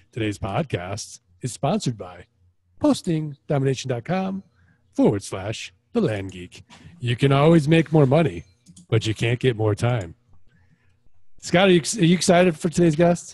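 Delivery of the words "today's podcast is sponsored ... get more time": news anchorman voice, slower. Podcast host reading the sponsor intro, in an Anchorman voice. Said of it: "your Anchorman voice".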